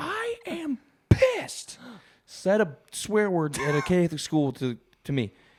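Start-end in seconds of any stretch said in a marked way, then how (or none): 0.0-1.8 scream, pitched way up high. Telling friends how someone slammed the door, then imitating them screaming. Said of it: "and screams".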